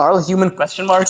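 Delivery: plain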